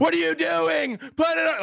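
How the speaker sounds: mock shrill, high, drawn-out hoarse top-of-lungs scream. Retelling a Weathertop film scene where one character yells, retelling a scream. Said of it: "screaming at the top of his lungs".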